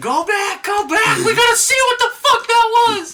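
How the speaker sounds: piercing, shrill, very high yell at full volume. Retelling a moment in a speeding car: retelling own screaming. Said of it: "I started screaming".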